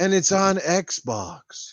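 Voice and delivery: grave, solemn, soft, very slow and drawn out. Imagining an awards host announcing a game: soft, somber voice. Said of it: "a soft, somber voice".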